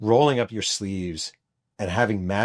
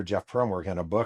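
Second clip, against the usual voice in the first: ordinary delivery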